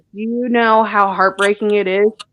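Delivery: normal talking voice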